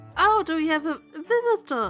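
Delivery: put-on very high, slow, girlish character voice. Voicing a visiting girl character in a game: really high character voice. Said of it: "I gave her a really high voice".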